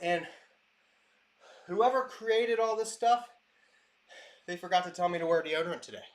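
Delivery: out of breath, trying to catch breath. Talking between kettlebell sets, trying to catch breath. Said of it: "trying to catch my breath".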